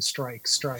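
ordinary talk, nothing marked

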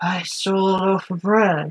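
low, mumbled, unclear drawl. Imagining Harrison Ford in a musical: mumbling Harrison Ford voice. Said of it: "I can only hear in my head mumbling, like".

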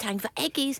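high, cooing dog-talk voice.

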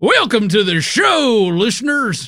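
put-on Texas accent. Welcoming listeners to the show, put-on Texas accent. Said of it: "why are we talking like Texas?".

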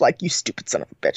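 mock muttering under breath. Retelling how a man insults someone while calming another, mock-muttering under his breath. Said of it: "under his breath is calling you".

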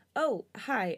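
ordinary delivery

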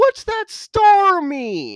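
very high, very slow, swooping, drawn-out yell. Retelling how a character shouts over laughing people: imitating a shout. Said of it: "shouts over them".

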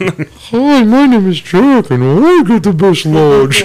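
bad puppet voice, pitched very high, loud. Joking with others about a puppet battle, doing the puppet Jack voice. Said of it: "Can't do the voice worth shit".

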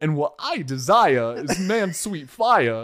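put-on, halting, actor-like voice. Retelling how Christopher Walken delivers a line: Christopher Walken impression. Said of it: "he literally goes like".

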